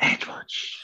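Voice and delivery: soft whisper. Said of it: "we don't have to whisper it anymore".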